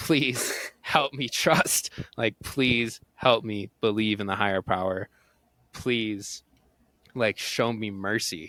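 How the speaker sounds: put-on desperate, pleading voice. Recounting a past prayer, retelling desperate begging. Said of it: "just begging for mercy".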